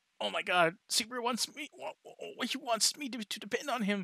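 mock all-excited, high, thrilled gushing delight. Retelling a story, the speaker voices Petra reacting to Subaru: Petra acting excited. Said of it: "Petra just gets all excited and is like".

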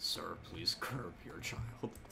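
low, soft, hushed, lifeless dead-inside voice. Imagining how a character would sound saying the line: Newt in a put-on dead-inside voice. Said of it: "Like dead inside voice".

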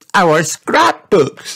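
very high, delighted hooray cheer. Narrator reading a storybook character's line, cheering. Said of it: "cheered Peppa".

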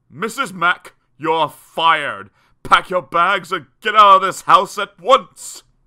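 very loud, high, roaring bellow. A man at the foot of the stairs addresses Mrs. Mack; bellowing. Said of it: "they heard him bellow from the foot of the stairs".

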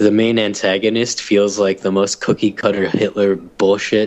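normal talking voice

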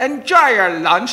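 put-on very loud, high, harsh Irish accent. Recalling what staff heard from a hotel hostess all afternoon, retelling her harsh irish accent. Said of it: "she had a very harsh Irish accent".

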